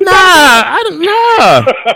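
high-pitched squeaky voice. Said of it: "You hear that high voice?".

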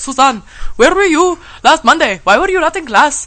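clumsy, bad Pakistani accent, high and loud. Quoting her professor from Pakistan, in a bad Pakistani accent. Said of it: "I have a really bad Pakistani accent".

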